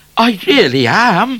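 high, loud, laughing voice, pitched way up. Trooper O'Grady answers Midnight's startled question, laughing. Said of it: "laughed O'Grady".

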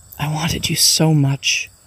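slow, tearful, heartfelt stage whisper. A mother embracing her son, tearful whisper. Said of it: "she whispered to her son tearfully".

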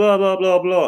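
very high-pitched screeching, ranting tone. Retelling what the woman screeched back: imitating a woman screeching. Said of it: "screeching, saying".

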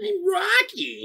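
very high-pitched voice. Trading actor impressions, the speaker does a Tom Hardy impression. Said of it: "That's my Tom Hardy".

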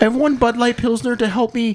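put-on crying voice. Talk about a beer before bed, sounding like a crying Jordan Peterson impression. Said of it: "I sound like a crying Jordan Peterson".

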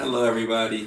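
glum, unhappy, downbeat tone. Introduced as the resident Lakers fan after a Lakers loss, he greets everyone glumly. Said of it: "You don't sound so happy".

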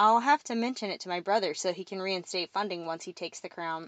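ordinary talk

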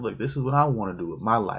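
ordinary delivery

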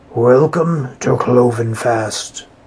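rich, full, raspy creature voice. Narrator voices a horse-bodied creature bowing to the boys, in a rich, raspy voice. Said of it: "said in a rich, raspy voice".

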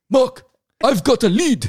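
very loud, belted, put-on British accent. Retelling a call from Pierce Brosnan after being asked to do his accent: Pierce Brosnan accent. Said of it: "Do the accent".

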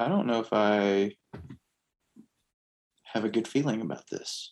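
hushed half-whisper under the breath. In a tabletop game, a character half-whispers to Slate, half-whispering. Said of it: "I just kind of whisper".

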